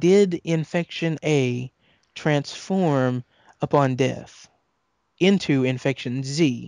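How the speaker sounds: slowed-down careful delivery. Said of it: "let me slow it down".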